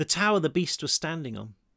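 plain

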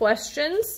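ordinary delivery, nothing marked

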